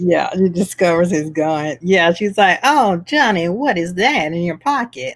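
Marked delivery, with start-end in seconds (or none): 2.6-5.2 put-on old-movie siren, film vamp voice. Acting out a movie heroine finding a gun: Mae West voice. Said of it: "I don't know why I'm doing Mae West".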